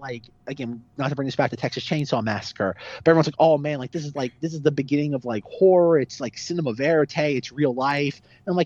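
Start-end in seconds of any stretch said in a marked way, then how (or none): none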